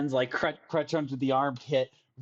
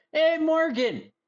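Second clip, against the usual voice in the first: shouting, higher and louder; 14 semitones higher, 5 dB louder than usual. Voicing a character calling to a captain at a ship: yelling out. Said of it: "Manny yells out".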